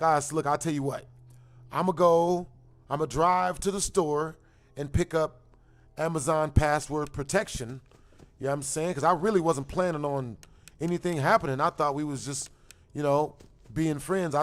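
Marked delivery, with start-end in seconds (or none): none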